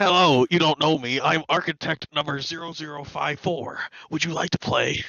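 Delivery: put-on loose, light hint of a Russian accent. Imagining a playground architect in the style of Saw: vague Russian Watto voice. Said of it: "vague Russian Watto".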